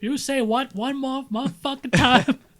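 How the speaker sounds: furious tough-guy movie delivery. Imagining their cat talking, the speaker does a Samuel L. Jackson impression. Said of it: "if your cat sound like Samuel L. Jackson".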